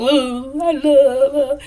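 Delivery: quavering, trembling, very slow voice. Retelling a scene with Saint talking about her: Saint's trembling voice. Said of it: "Saint voice start to tremble".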